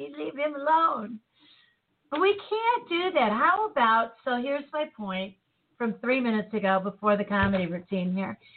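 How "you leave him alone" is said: small protective yelling outburst. Acting out a scene where a passenger yells at a police officer; retelling a yell. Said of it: "she's yelling at the cop".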